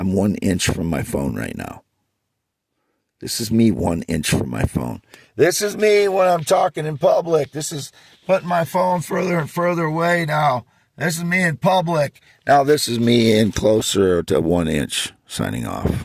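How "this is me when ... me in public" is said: very high, carrying, projected public-speaking voice. Showing how they sound talking in public, away from the phone, projecting the voice. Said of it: "when I'm projecting my voice".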